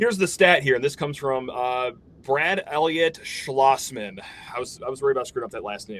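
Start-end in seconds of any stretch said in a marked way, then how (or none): 2.2-4.2 very slow, careful, deliberately drawn-out reading. Speaker reads out a surname he was worried about getting wrong, very slow. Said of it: "That's why I had to read it so slow".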